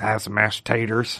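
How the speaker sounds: low, quiet, flat, soft monotone. Hosts imagining a character's monotone answers, riffing in a Sling Blade voice. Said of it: "kind of like Sling Blade".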